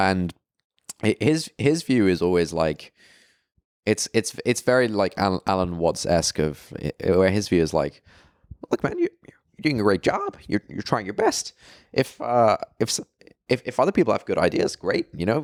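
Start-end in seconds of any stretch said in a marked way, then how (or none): 8.7-15.5 high, swooping put-on lecturing voice, pitch swinging up and around. Retelling a friend's advice to another speaker: Jordan Peterson impression. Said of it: "Was that a Jordan Peterson impression?".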